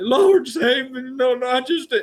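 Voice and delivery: very high, very slow, drawn-out preacher yelping. Imitating a preacher at a Baptist church: imitating a yelping preacher. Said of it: "preachers that yelped".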